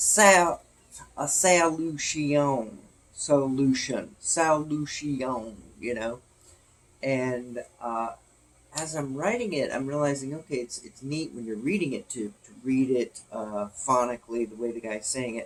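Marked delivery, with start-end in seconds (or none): 0.0-5.6 loud, thick, very slow Southern drawl. Showing how a southern speaker stretches a word: real southern accent. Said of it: "like this".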